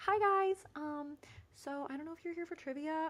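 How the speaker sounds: put-on very high, extra-nice, polite tone. Retelling a request to some men for their table: imitating own nice tone. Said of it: "I started off so nice".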